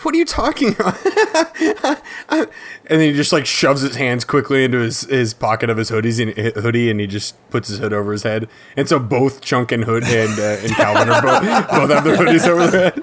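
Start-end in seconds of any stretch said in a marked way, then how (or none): 0.0-1.0 high, squeaky, baffled, incredulous voice. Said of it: "I'm like".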